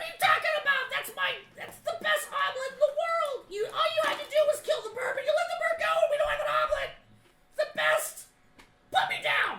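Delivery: very high, very loud, shrill gnome rant. Voicing a gnome whose egg was just stolen: gnome voice. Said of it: "it's just kicking his legs".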